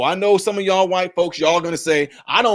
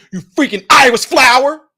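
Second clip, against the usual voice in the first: angry, insulting tone; 7 semitones higher, 7 dB louder than usual. Example of getting mad at someone and insulting them: angry tone. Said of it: "if I got mad at you and said".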